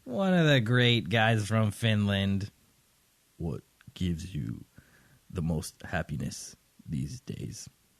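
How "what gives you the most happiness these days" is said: deep, terrifying vampire voice, quieter. The host reads a listener's question to the guest in a deep terrifying vampire voice. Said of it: "in like a deep, terrifying, uh, vampiric".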